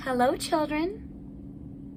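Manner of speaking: soft, sweet, gentle voice. Reading a story aloud as someone arrives to the waiting children, sweet voice. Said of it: "someone said in a sweet voice".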